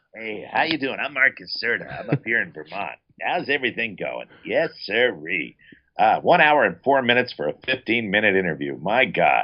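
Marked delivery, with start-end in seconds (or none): 0.2-5.6 mocking put-on voice, quieter. A guest acting out how two hosts do his voice, imitating impressions of himself. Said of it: "do one hell of an impression of me".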